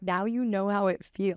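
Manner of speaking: ordinary delivery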